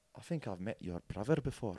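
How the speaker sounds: put-on Scottish accent. Retelling meeting a man at the club, the speaker does Andy Grant's Scottish accent. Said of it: "in his Scottish accent".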